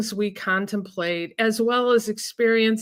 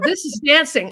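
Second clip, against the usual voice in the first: put-on cheerful, bright, pitched-up, lit-up tone; 5 semitones higher, 4 dB louder than usual. Retelling a friend showing an ra her moves: imitating a friend, smiling. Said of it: "And then she'd be smiling".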